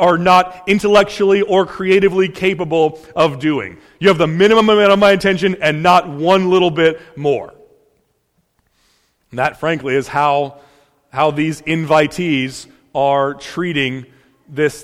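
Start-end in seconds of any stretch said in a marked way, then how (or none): none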